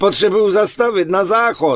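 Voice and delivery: high, begging, imploring voice. A passenger in the car speaks up to the driver, begging. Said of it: "prosil jsem".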